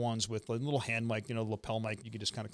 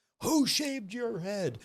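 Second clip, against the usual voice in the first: very high-pitched yell; 10 semitones higher than usual. Retelling an instructor yelling at a recruit in formation: imitating instructor yelling. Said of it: "He starts yelling at me".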